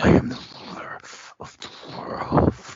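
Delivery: wrestler promo voice spoken through clenched teeth. Showing Matt how to do the restarted promo, as a Sid promo with teeth kept together. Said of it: "keep your teeth together when you say it. That's how you do a Sid promo".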